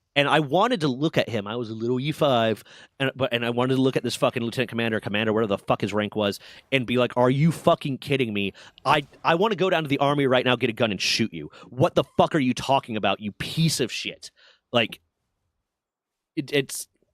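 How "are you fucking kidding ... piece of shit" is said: enraged, furious tirade full of cursing. Retelling what the speaker wanted to say to an officer: retelling a furious outburst. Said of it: "I was so fucking mad".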